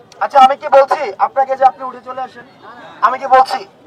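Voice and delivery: loud shouting. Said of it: "Everyone don't shout".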